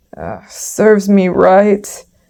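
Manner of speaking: slow, growling beast wolf voice. Narrator reading a fable, the wolf speaking after the donkey kicks him, growling wolf. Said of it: "growled the wolf".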